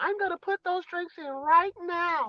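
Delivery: mimicked overly pleasant voice. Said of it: "that overly pleasant voice".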